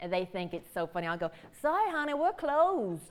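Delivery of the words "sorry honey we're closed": extra-thick, exaggerated Southern accent, pitched up. Showing a joking bit others find funny: exaggerated Southern accent. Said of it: "if I try to be even more Southern".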